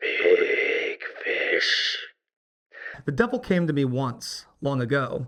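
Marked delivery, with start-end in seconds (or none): 0.0-2.0 hushed whisper thick with greed. Something inhuman speaks: whisper of hushed greed. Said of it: "it whispers in tones of hushed greed".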